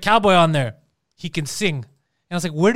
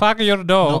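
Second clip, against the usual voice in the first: put-on Indian accent, slower. Mocking how another speaker said the line, imitating an indian accent. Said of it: "That's how you said it".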